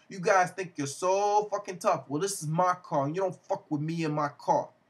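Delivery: put-on Spanish accent.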